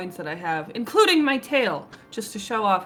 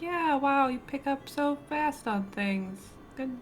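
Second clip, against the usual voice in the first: forced, lukewarm, weak, slow, half-hearted tone; 7 semitones higher, 4 dB quieter than usual. Reacting in character to another's juggling: weak, half-hearted praise. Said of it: "give a weak smile and just be like".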